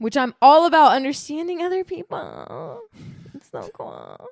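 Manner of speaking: high, swooping, ditzy put-on voice. Talking with two others, switching into a dumb blonde voice. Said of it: "you're saying in a weird way".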